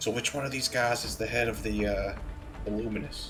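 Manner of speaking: half-whispered aside, breath only, hushed. Playing a character who half-whispers a question to two companions: half-whispering. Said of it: "I whisper to them".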